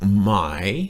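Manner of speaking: "my" said with a rising tone. Explaining tones with a question word: rising tone on my. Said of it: "with the rising tone".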